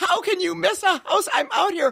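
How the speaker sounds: put-on exasperated yell. Retelling yelling at a driver who missed the house, retelling own yelling. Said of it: "And I start yelling".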